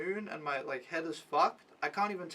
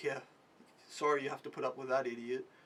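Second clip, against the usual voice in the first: derisive, dismissive, commiserating scoff; 4 semitones lower, 3 dB quieter than usual. Retelling what a bystander said after scoffing: imitating a scoffing remark. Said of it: "he looks at me and he scoffs".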